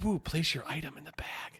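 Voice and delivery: hushed, breathy whispered machine voice. Imagining how the bagging prompt would talk, whispering. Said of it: "like it whispers".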